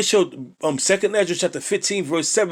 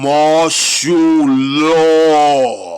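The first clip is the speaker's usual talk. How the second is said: slow, raised, deliberate, spelled-out pronouncement; 7 dB louder than usual. Repeating a phrase so it sinks in for the audience, said slowly. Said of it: "Let me say it slow".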